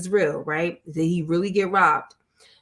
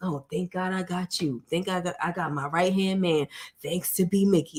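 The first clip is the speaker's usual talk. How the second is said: put-on, insincere grateful tone, quieter; 4 dB quieter than usual. A viewer discussing a show quotes Meech thanking his right-hand man, imitating Meech's fake gratitude. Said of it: "It just sounds so like it sounds fake".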